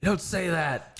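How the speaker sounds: high-pitched mom voice.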